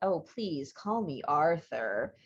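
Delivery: low, slick, slimy, oily voice. Co-host imagining the man on the other end of the call, slimy, oily Arthur Gilchrist voice. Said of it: "Probably in a very slimy and oily voice".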